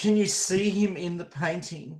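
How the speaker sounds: high, crying, sobbing voice that breaks. Narrating a game scene, the speaker voices a woman while she is sobbing uncontrollably. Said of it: "she is sobbing uncontrollably, and out of her out of her broken voice".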